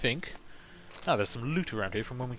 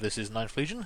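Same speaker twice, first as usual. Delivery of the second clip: ordinary delivery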